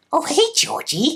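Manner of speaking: very high-pitched clown voice. Put on the spot in an impression contest, trying a Pennywise impression. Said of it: "who can do the best impersonation of Pennywise".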